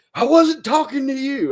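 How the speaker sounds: put-on very high, shrill, furious screaming. Retelling how a lady at a corral turned and screamed at the speaker: imitating a woman screaming. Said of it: "scream at me".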